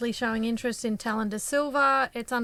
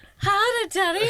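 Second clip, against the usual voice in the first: put-on full-on boy voice, higher and louder; 10 semitones higher, 6 dB louder than usual. Retelling what a boy said to people walking past: imitating a boy's full-on voice. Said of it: "he put on the full-on voice".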